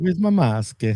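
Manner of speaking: Italian-sounding accent. Asking where the mask is, with an Italian-sounding accent. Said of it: "Why do I sound Italian saying that?".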